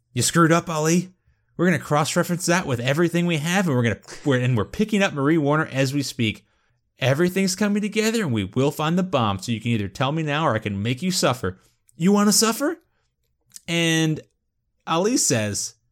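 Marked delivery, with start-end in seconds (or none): 0.2-12.8 high, forceful shouted whisper, pushed hard. Retelling a scene where Jack leans into Ali's face: Jack whisper-shouting. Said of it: "whisper shouts".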